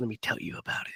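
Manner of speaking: barely voiced, very quiet, soft, breathy whisper. Imitating someone starting to tell the story about Jason: whispered. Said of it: "he's whispering it like this".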